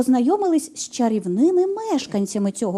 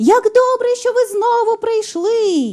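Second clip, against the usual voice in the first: delighted, joyful, very high voice; 10 semitones higher, 4 dB louder than usual. A talking piano greets the Master who has come back: joyful. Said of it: "Зрадів рояль".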